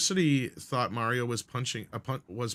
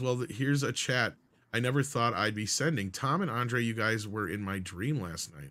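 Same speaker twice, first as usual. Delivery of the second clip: ordinary delivery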